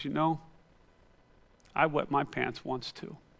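put-on whisper. Telling a story where a girl whispers back to a boy at the bus stop: imitating a whisper. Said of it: "she whispers back and says".

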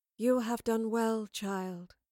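calm, gentle, slow, soothing delivery. Reading Madeline's reply to Boudicca, who brought her an offering, soothingly. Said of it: "Madeline said soothingly".

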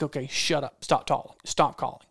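plain

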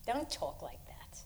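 slow, soft, hushed reassuring whisper.

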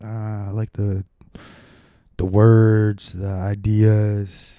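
put-on somber athlete voice. Retelling a press conference, imitating somber LeBron James. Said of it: "He's all, like, somber".

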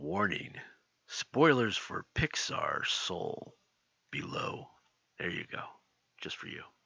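dropped, slow, deliberate voice. Before discussing pixar's soul, giving the spoiler warning, lowered voice. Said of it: "drop my voice down a little bit".

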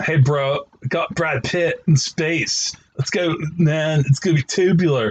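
put-on surfer bro voice. Describing moviegoers eager to see a space movie, in a surfer dude voice. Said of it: "I'm giving them all surfer voices".

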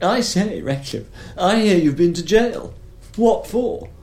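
very high, shrill, carrying shout. Recounting a dinner where a man called to him down the long table, retelling a shout. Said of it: "he sort of shouted down the table".

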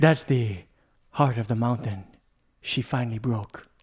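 put-on over-the-top South American accent. Quoting a movie line after being asked: Antonio Banderas accent. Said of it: "Do it in an accent, please".

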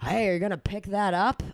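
angry, sloppy delivery. Retelling a voice calling out from a pickup truck, in a terrible John Madden impression. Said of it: "I'm doing a terrible impression".

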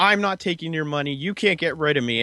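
mock, heated, confrontational yelling. Retelling a scene where one character confronts another: imitating someone yelling. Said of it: "yelling at him".

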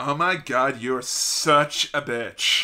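very slow, stretched-out, drawn-out cadence on every word. Retelling a wrestler insulting Stephanie: imitating Brie Bella's cadence. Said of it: "No one has ever used that cadence".

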